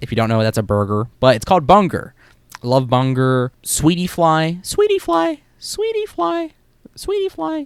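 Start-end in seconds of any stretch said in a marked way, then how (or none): 4.6-7.7 very high-pitched, slow, drawn-out, rising voice. Naming a snack from the game: high-pitched voice. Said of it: "My high-pitched voice sucks".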